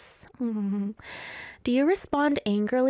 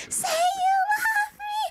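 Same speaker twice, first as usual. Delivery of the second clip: very high, sobbing, screaming shout, breaking down in tears. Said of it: "Let me do it again".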